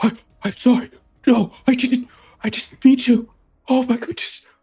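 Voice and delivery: horrified. Voicing a character who has hurt someone in a fight: horrified. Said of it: "he's got this horrified look in his face".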